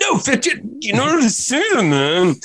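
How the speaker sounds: mock evasive dude voice, very high and airy.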